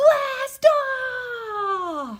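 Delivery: super excited, very high, loud, drawn out. Showing readers how to read the poem's last line: super excited. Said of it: "we say that like we're super excited".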